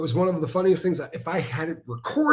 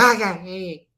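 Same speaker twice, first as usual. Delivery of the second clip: put-on barking voice, slower and louder; 4 semitones higher, 6 dB louder than usual. Retelling to a friend how someone reacted, doing an impression of that person's sharp response, as an imitated bark. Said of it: "Just like it was a bark".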